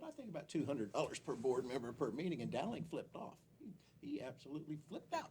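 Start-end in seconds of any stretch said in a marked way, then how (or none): 0.1-2.4 mock, tongue-in-cheek, sarcastic tone. Retelling his own remark at a city council meeting: retelling own sarcastic remark. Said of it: "And sarcastically, I said".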